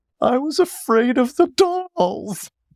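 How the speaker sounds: mock, very high, slow, drawn-out sobbing words. Retelling a joke said while grieving: imitating own sobbing. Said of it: "in between all my sobs".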